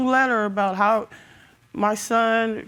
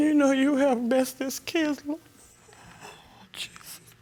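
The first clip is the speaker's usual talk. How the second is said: sobbing, crying through the words; 4 semitones higher, 4 dB quieter than usual. Talking about a disputed letter and test, sobbing.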